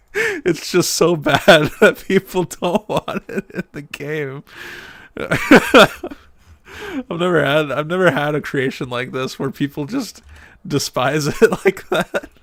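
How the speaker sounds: loud, talking through laughter. Reacting to viewers wanting the highway removed, laughing while talking. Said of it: "I'm just laughing at my own creation".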